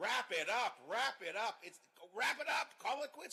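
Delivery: slow, loud, drawn-out hollering. Retelling yelling at the tv during a long speech: imitating own yelling at tv. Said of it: "I was yelling at the screen".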